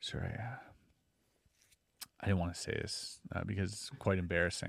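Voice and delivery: dead-serious, breathy, hushed near-whisper. Retelling looking someone dead in the eyes to give an excuse: imitating own very serious tone. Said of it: "very serious".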